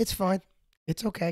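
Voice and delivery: put-on deadpan. Retelling her reply after you apologized for messing things up, in mock deadpan. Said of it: "so real deadpan".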